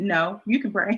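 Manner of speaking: sassy, with attitude. Retelling own reply when asked to pray: imitating own reply with attitude. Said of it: "with an attitude".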